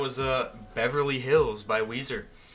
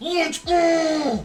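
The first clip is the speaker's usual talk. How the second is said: hyped cheer, much higher and louder; 7 dB louder than usual. Demonstrating a sideline cheer, in a hyped football cheering voice. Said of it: "say "Let's go" in my hyped football voice".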